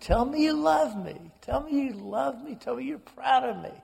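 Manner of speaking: mock shrill screaming, very high, over and over. Retelling a sister's plea at a dying father: imitating a sister screaming. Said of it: "she is screaming over and over again".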